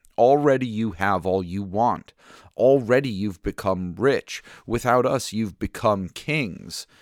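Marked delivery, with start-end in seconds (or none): none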